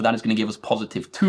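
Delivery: fast, rushed delivery. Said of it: "I know I'm going quickly".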